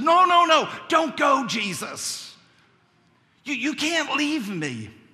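put-on begging wail. Speaker describing a picture acts out a man retelling a man crying out. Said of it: "he basically cries out and says".

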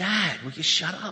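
loud, fed-up, exasperated emotional outburst. Retelling a reply to a dad trying to reassure before surgery, imitating an emotional outburst. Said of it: "she was real emotional".

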